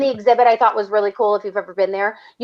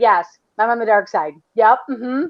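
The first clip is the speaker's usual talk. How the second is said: mock frightened, instantly yielding delivery. Retelling a nervous answer to a villain: imitating Zach sounding scared. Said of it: "Scared as hell".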